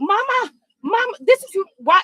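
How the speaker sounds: very high, loud hollering yell. Retelling how a woman called out from a distance: imitating Mama Joyce yelling. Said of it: "why is she yelling like she was on the telephone".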